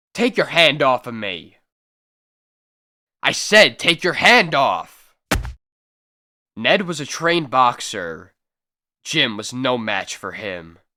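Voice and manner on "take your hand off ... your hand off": hot-tempered, angry, threatening tone. Miner quitting the claim orders his partner to let go of him: angry. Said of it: "I'm a cowpuncher, / [name] throws down his pick and strides angrily over to his partner. / I'm through with this backbreaking drudgery".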